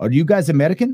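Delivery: clumsy, awful put-on German accent. Reminding a friend of a guy bringing drinks in Germany; awful impersonation of German guy. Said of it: "I'm doing an awful impersonation".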